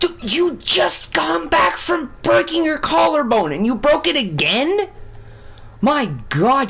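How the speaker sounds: very high, slow, aggravated wail of disbelief. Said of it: "that's just aggravating".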